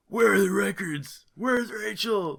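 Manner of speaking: high, parched, dry-throated caped superhero voice.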